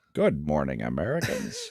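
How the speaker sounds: awkward announcer voice. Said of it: "That is the worst Optimus Prime I've ever heard".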